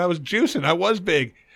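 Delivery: ordinary talk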